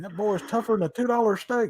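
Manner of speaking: high, wrestling-commentator announcer voice. Recalling favorite wrestling commentators, quoting a call: Jim Ross impression. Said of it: "I always preferred Jim Ross".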